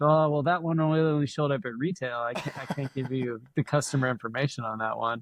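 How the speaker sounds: plain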